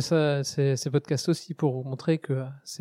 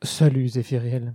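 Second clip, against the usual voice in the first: put-on, attempted seductive, sexy voice. Introduced on a show, the guest answers the host's greeting in an attempted sexy voice. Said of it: "J'essaye de faire une petite voix sexy aussi".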